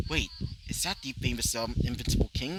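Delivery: ordinary delivery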